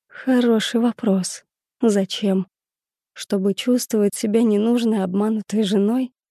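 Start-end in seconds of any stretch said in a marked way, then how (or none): none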